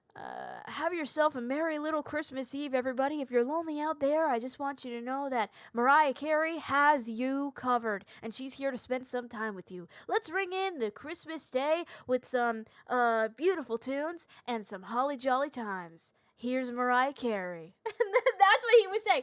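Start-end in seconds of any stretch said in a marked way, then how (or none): 0.2-17.7 radio DJ announcer patter. Retelling what the radio DJ said on Christmas Eve, imitating a radio DJ. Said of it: "the D J was going".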